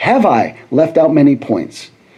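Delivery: statement-like falling tune, dropping on points. Quoting a man's question as if a statement: falling tune on points. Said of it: "I said that as a statement, not a question".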